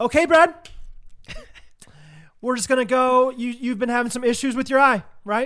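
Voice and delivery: patronizing teacher voice, high and loud. Retelling how a man talked to him beforehand, mock third-grade-teacher tone. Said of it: "he talks to you like he's teaching a third grade class".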